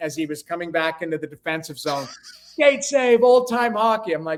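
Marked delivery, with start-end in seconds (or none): 2.4-4.1 pitched-up, screamed delivery. Retelling how a teammate chasing the puck screamed: imitating a teammate screaming. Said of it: "Reggie screaming that".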